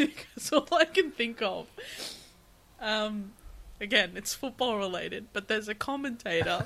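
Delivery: words broken up by giggling laughter. Apologizing during a serious conversation, laughing while talking. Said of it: "I can't stop laughing".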